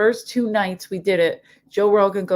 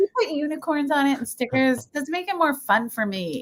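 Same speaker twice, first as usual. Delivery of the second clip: put-on, high, mocking girly voice; 6 semitones higher, 4 dB quieter than usual. Retelling a comedy bit about a girlfriend: imitating a put-on girl voice. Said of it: "his girl voice is what we would make fun of".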